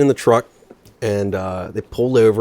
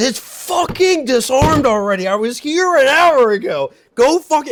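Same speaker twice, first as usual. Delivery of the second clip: very high, slow, acted-out, super-pissed grouchy griping; 3 dB louder than usual. Telling a story, acting out what a man said after kicking the thing, mock-pissed grouchy rant. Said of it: "he was like super pissed and grouchy".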